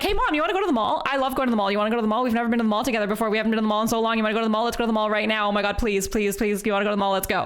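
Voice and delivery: mock pleading, far too eager, sounding suspicious. Retelling talking to mom while boyfriend hid: imitating own suspicious pleading. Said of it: "I was way too suspicious".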